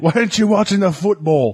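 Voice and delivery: mock cockney accent, flat guidance voice. Imagining a Cockney automated voice for a car GPS, in a put-on Cockney accent. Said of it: "I want the Cockney one for my G P S".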